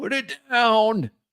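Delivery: put-on very high-pitched elderly man's voice. A game master voices a character responding to a player, old man's voice. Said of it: "An old man's voice".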